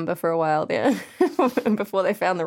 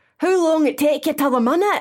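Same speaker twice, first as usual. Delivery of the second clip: put-on Scottish accent, local voice, pitched up; 8 semitones higher, 4 dB louder than usual. Doing a Marty impression from the show, Scottish accent. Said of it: "I've been practicing my Marty impression".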